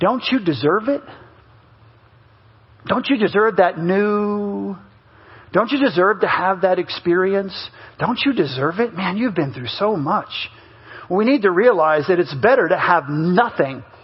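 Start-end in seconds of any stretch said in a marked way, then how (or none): 0.0-10.3 tempting, enticing half-whisper, close in the ear. Preaching, acting out the tempter speaking to someone: Satan half-whispering. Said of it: "And he whispers to you".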